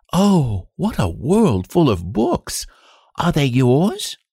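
high, drawn-out cry of wonderment. The king enters a room of books before his ministers; cried out. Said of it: "Lionel cried out".

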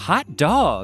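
small contained shriek, a little yelp. Recalling a video of themselves as a sixth grader, the speaker retells a scream. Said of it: "I just screamed".

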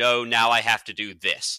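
mock robotic voice. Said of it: "he's like a robot".

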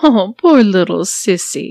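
condescending. A woman addresses the narrator, condescending. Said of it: "she said condescendingly".

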